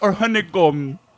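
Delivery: put-on Indian accent. In an improv scene about shopping down an aisle together, speaking with an Indian accent. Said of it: "Why does he sound Indian?".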